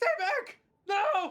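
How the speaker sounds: choked, strangled, very high-pitched shriek. Voicing a character in the reading as the scene reaches a scream: strangled scream. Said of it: "a strangled scream".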